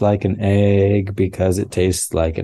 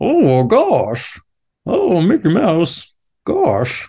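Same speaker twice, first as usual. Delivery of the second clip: very high squealing cartoon dog voice, big swoops; 9 semitones higher than usual. Showing someone how Goofy sounds, in a Goofy voice. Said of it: "he sounds like".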